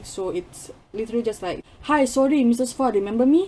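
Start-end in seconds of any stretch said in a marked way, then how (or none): 1.8-3.5 put-on Singaporean accent. Describing the script of a play, demonstrating a put-on Singaporean accent. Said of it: "it's literally a Singaporean accent".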